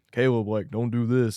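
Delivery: deep loud booming voice. Imagining how people expect God to speak, booming voice of God. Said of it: "a big belling voice".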